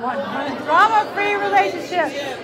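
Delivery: loud, high, dramatic shouting by several voices.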